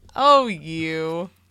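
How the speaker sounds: put-on casual laughing wave-off. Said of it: "a casual wave away and a laugh".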